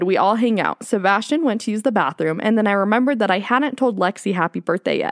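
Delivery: ordinary delivery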